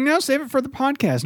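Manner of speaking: high-pitched, teasing, mocking put-on voice. Imitating the other speaker brushing off the rules: mocking impression. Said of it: "That was my impersonation of you".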